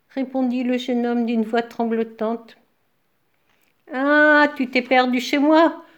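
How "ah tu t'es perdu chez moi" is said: loud growling with a smothered chuckle. A bear answers a young man lost in its home, growling, stifling a laugh. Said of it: "grogna l'ours en étouffant un rire".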